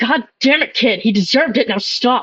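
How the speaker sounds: stern, hard, angry scolding outburst. Voicing a character fighting with a sword: character shouting. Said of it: "As you hear Augustus shout".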